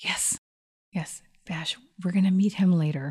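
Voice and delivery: soft, unvoiced whisper. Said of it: "Why are we whispering?".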